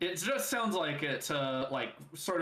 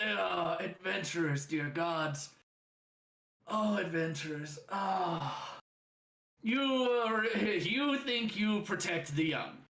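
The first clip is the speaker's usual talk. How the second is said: slow, gravelly gargling monster voice, laughing like gargling rocks; 5 semitones higher than usual. A creature laughing hard speaks to the adventurers, gargling-rocks laughing creature voice. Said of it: "The the creature sounds like it's gargling rocks because it's laughing so hard. / The the creature sounds like it's gargling rocks because it's laughing so hard".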